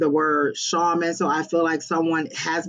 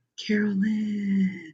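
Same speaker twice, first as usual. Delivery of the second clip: very breathy, airy, drawn-out half-whisper; 4 semitones higher, 4 dB quieter than usual. Retelling how voices said a name: imitating a breathy half-whisper. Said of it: "a very breathy whisper".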